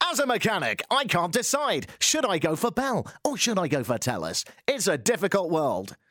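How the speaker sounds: mock advertising voiceover-artist voice, parodied. Speaker mocking how ad voiceovers are read, in a mock voiceover-artist voice. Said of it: "No one speaks like that".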